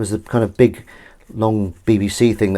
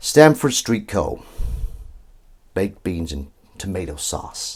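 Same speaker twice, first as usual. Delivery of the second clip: attempted put-on American accent; 4 dB quieter than usual. Trying out an accent while washing up: attempted American accent. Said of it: "say something in an American accent".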